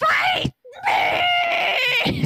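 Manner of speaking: high, loud yelling spider voice.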